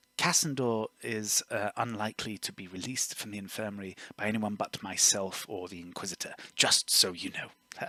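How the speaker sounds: acted, very quiet, hushed whisper. Voicing a character leaning in to whisper a warning. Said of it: "whisper to her".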